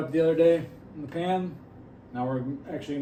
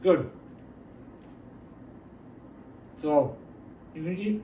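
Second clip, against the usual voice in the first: talking through a mouthful, chewing; 4 dB quieter than usual. Taking a bite of a burger to review it, talking with mouth full. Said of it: "talk with my mouth full".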